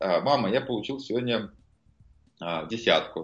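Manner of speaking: ordinary delivery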